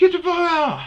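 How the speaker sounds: shrill, loud, very high shout. Retelling confronting a man on his bush, the speaker re-enacts yelling at him. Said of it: "I'm yelling at him".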